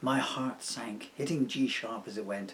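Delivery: voice dropped a touch. Telling a story about his beloved piano, dropping to a lower voice. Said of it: "I'm going to change my voice down just a little bit here".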